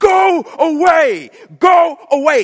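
very high, very loud, shrill, enraged scream. Storyteller voicing a demon screaming at Jesus through its host: screaming at top of voice. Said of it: "screaming through his host at the top of his voice".

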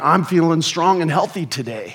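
bold delivery. Retelling claiming to feel fine while sick: boldly, imitating oneself. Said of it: "all the more boldly, I'm like".

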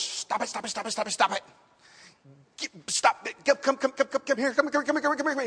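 repetitive, bumbling, hapless fatherly scolding tone. Retelling a comedy routine where a parent scolds a child: Bill Cosby impression. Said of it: "the old Bill Cosby routine".

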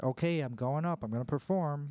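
ordinary talk

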